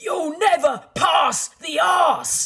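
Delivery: mock very high, zany, over-enthusiastic top-of-voice scream. Retelling the old days in the Highbury dressing room, imitating Tony Adams screaming, zany and over-enthusiastic. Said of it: "he would scream at the top of his voice".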